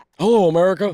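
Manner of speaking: very high, loud voice. Offering an impression when asked for Joe Biden: Joe Biden voice. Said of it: "You got a good Joe Biden?".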